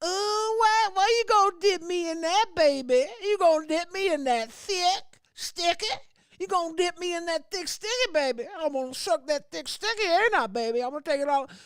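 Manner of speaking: very high, put-on Southern granny voice. Telling a story about a stereotype bit, the speaker slips into a southern grandma voice.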